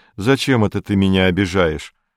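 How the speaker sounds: plain reading voice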